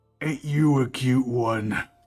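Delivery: monster orc voice. Voicing an orc speaking to a character in the living room: orc voice. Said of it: "You hear the orc snort".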